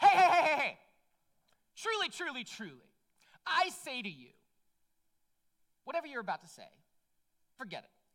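put-on rude tone. Retelling a story, acting out one figure interrupting another's question, mock-rude. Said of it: "Jesus very rudely says".

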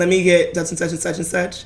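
ordinary delivery

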